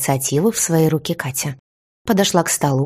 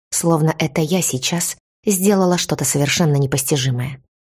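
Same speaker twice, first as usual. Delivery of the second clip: ordinary delivery, nothing marked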